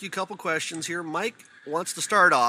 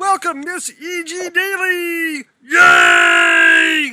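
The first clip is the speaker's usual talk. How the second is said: very high, loud puppet shout; 11 semitones higher, 12 dB louder than usual. Welcoming the guest, the voice of Tommy Pickles, in a Kermit the Frog voice. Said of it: "I'm going to be Kermit the Frog".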